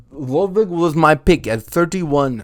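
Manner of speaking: put-on Russian accent. Speaker naming his pick at thirty-one: fake russian accent. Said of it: "why am I doing it in a Swedish? That's a Russian accent".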